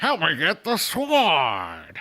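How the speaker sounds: very slow, swooping put-on pirate voice. Retelling a TV scene to viewers, imitating pirate talk. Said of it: "like a pirating talk".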